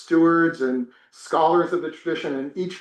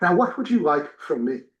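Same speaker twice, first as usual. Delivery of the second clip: put-on plummy, posh received pronunciation English accent. Retelling the teacher's first words to him, in a Queen's English accent. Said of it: "and then in the Queen's English".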